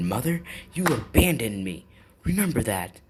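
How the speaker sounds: put-on sharp angry comeback. Retelling how he snapped at his mother, acting out an angry snap. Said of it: "that's when he snapped".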